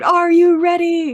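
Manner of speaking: very loud, piercing, very high shriek. Retelling what she first said on stage: imitating her own past scream. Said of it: "I just screamed".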